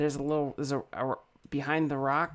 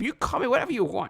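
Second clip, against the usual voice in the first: put-on higher old man character voice; 7 semitones higher than usual. Voicing an old man in a rowboat greeting the players: Salty Jim voice. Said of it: "Salty Jim".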